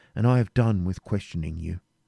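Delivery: ordinary delivery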